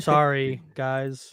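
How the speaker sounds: put-on robotic voice. Imitating a contestant who talks robotically: imitating Hai's robotic talk. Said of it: "Hai talks so robotically".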